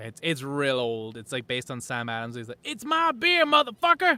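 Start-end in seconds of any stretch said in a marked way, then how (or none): 2.6-4.2 shouted, pitched-up yell. Describing a Dave Chappelle skit to others, doing a shouted Samuel L. Jackson impression. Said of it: "I think people just shout like ah".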